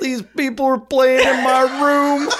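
squeaked out, high and loud. Joking about people playing in a room: bad Bill Cosby impression. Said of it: "I really wanna do a bad Bill Cosby impression".

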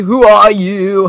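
high, loud, slow, whiny wailing voice.

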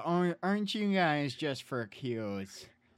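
mock sarcastic tone. Imitating how a girlfriend's parents react to the couple: mock sarcastic tone. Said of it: "In a very sarcastic".

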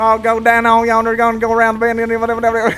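loose, run-on rambling, loud and high. Speaker riffs on another country's version of an accent: Boomhauer impression. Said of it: "It's like Boomhauer".

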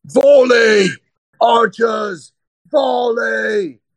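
loud, high-pitched, commanding shout. Narrating a story, a familiar voice calls from behind the listener: loud shout. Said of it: "you hear this loud voice".

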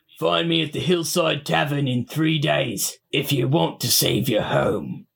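rough, gruff, worn-down voice. A narrator voices a factory worker calling out to the listener in a dream: gruff, smoke-scarred voice. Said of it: "they call to you in a gruff voice, scarred by years of working in a smoky factory".

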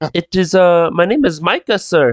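terrible fake Irish accent. Asked his name by a stranger, the speaker answers in a very terrible Irish accent. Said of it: "I'm doing a very terrible Irish accent".

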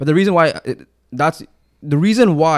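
stammering, very slow. Discussing Dallas football with another speaker, the speaker starts a point, stuttering. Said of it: "I don't know why I'm stuttering so much".

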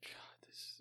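soft, breathless, awed whisper.

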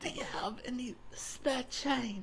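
put-on very high, famished-sounding voice in a British accent. Teasing the other person about how they sound, in a starving, quiet british voice. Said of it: "You're like a starving, quiet British person".

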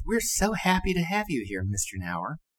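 very high, effeminate voice. Retelling how a man welcomed him, imitating Henry Morris's effeminate-sounding voice. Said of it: "he had a very effeminate sounding voice".

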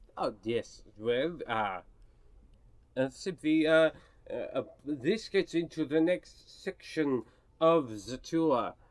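put-on mixed French, Russian, German foreign accent. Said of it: "Whoa, where did Cassius Dupree come from?".

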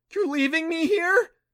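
squeaky, very high, loud cry. Reading a story, voicing a tied-up mother asking her son, squeaking. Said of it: "She squeaked".

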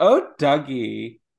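exaggerated camp delivery, loud.

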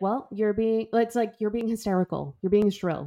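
ordinary talk, nothing marked

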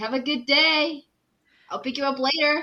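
play-acted loud, high-pitched yell. Voicing a character calling after the kids as they leave: yelling. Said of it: "and he yells".

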